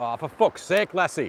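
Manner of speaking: loud, outright shouting. Out on a walk, talking to viewers, suddenly yelling at lassie. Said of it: "while I'm yelling".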